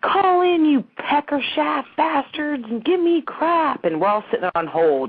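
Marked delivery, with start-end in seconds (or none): 0.0-3.8 acted, very high, shrill, stretched-out, drawn-out screaming. Retell a show host ordering people to call in while they sit on hold, imitating a man screaming. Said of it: "he's screaming like".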